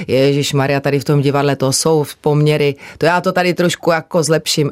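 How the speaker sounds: normal talking voice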